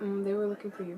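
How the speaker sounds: imitated whispering. Retelling a brother speaking during church: imitating someone whispering. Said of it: "whispering to me".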